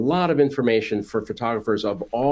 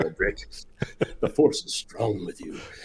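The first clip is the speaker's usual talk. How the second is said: hushed, breathy voice with heavy breathing; 6 dB quieter than usual. Joking with the host after offering to breathe like Darth Vader: Darth Vader voice. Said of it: "Should I start breathing like Darth Vader?".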